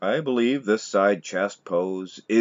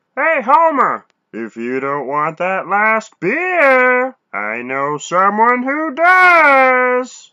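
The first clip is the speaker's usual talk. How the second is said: very high, loud, swooping cartoon voice, "does" stretched out; 9 dB louder than usual. Doing an impression for viewers, Barney Gumble impression. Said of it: "Here's my Barney Gumble from The Simpsons".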